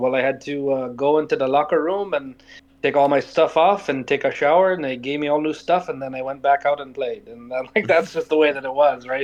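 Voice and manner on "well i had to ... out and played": put-on French Canadian accent. Retelling what a man told him over a beer, imitating a French Canadian accent. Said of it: "I'm trying not to butcher his his uh, French Canadian accent".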